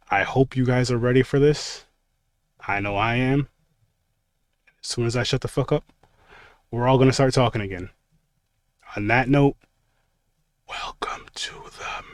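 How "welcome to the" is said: eerie, creepy, very hushed, nearly inaudible whisper. Opening a show about Haunted Hill from 1959, in a creepy whisper. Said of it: "I tried to do like the creepy whisper. I got way too fucking quiet".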